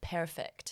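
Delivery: exaggerated Scottish "perfect", breathy and whispered. Showing how they say a word with Scottish inflection, exaggerated Scottish accent on perfect. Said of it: "with like a Scottish inflection ... I'm gonna overdo it now".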